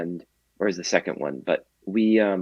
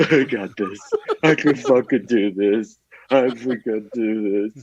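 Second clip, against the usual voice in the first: mock tearful, loud crying voice; 4 semitones higher, 5 dB louder than usual. Retelling a slow run around his neighborhood, imitating his own crying. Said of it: "crying, going like".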